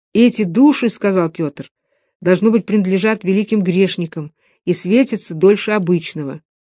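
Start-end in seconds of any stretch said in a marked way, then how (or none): none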